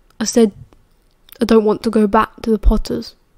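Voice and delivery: ordinary talk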